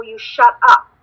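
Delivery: ordinary talk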